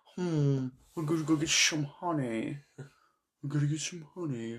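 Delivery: soft, murmured, not-so-great cartoon voice. After likening the other speaker's voice to the character, do a not-so-great Winnie the Pooh voice. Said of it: "I'm not sure that's one of your best voices".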